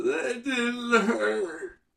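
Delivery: mock weepy boy voice, very high and soft. Retelling a boy's reply to his dad after getting hurt, imitating a boy crying. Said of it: "through tears in his eyes".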